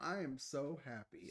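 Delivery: facetious, sarcastic tone. Talking about going back to a former boss, facetious. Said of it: "I'm kind of being facetious".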